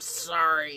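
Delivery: put-on grudging growl through the teeth. Retelling apologizing to a sibling while still angry: imitating a growled apology. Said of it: "growl apologies at each other".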